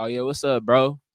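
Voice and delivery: unenthusiastic, unexcited tone. Showing how he greets guys he doesn't like on his Instagram lives: unenthusiastic greeting. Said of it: "the guys that I don't really fuck".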